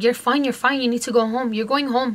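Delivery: ordinary talk, nothing marked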